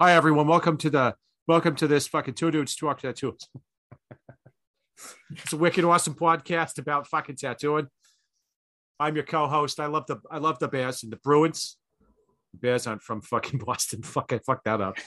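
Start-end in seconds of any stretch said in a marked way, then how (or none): 0.0-11.8 put-on East Coast Irish accent, much higher pitch. Podcast co-host jokingly opening the show in an East Coast Irish accent. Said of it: "straight East Coast Irish the whole fucking time".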